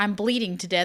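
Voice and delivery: ordinary talk, nothing marked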